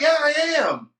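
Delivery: very high called-out voice. Retelling a friend answering a police officer: imitating someone yelling. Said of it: "she yells out".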